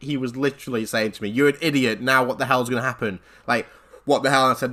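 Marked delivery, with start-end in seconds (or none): none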